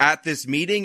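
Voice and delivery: normal talking voice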